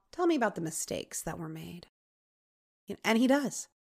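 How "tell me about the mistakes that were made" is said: acted calm, cool, composed, soft voice. Retelling the story, imitating Captain Johnson speaking to Sam, imitating Captain Johnson's calm. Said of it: "Just like real calm".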